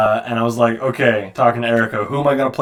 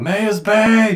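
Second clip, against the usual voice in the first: put-on screaming, pitched higher; 10 semitones higher than usual. Imitating how Malfoy would scream about Mei: imitating Malfoy screaming. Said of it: "he'd be in here screaming right now".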